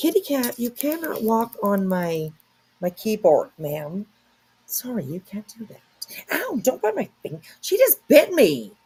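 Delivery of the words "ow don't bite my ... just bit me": indignant, higher. Scolding a cat that just bit a finger: offended. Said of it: "You sound so offended".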